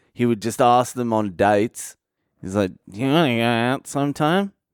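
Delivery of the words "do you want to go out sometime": strongly nasal, all through the nose. Recounting how Piglet asked people out, nasal Piglet voice. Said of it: "Real nasally voice old Piglet had".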